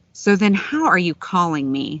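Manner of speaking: put-on condescending, talking-down tone. Retelling what a 911 dispatcher asked a caller: imitating someone talking down. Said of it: "just talking to her like she's stupid".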